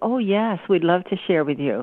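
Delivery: ordinary talk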